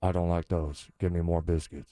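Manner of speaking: very deep, dropped voice. Playing Shaquille O'Neal ordering food at Red Lobster: Shaquille O'Neal impression. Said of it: "Shaquille O'Neal ordering food at Red Lobster".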